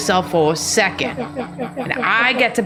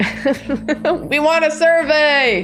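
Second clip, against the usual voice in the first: put-on yelling, drawn out and pitched up; 5 semitones higher than usual. Retelling how pursuers chased and yelled questions: imitating someone yelling. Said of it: "yelling questions at me".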